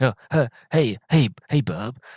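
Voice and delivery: stammering slowly and badly throughout. Joking about Hugh Grant in a role: bad Hugh Grant impression. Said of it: "a really bad Hugh Grant impression".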